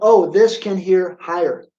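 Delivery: normal talking voice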